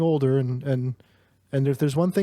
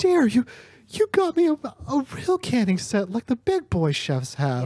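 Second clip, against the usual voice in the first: tearful, very high, swooping voice; 9 semitones higher than usual. Voicing the dad opening a gift, tears welling up: teary-eyed dad voice. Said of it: "you see, like, tears welling up in his eyes".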